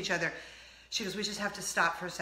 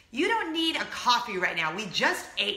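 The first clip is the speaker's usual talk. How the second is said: mock-disgusted tone; 3 semitones higher than usual. Quoting a man refusing the speaker a coffee, mock-disgusted tone. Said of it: "Total disgust in his voice".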